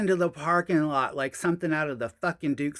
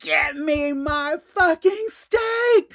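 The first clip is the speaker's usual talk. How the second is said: very high, very slow, drawn-out rising scream; 13 semitones higher, 8 dB louder than usual. Retelling throwing a plate through the restaurant door: imitating own screaming. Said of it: "I started screaming".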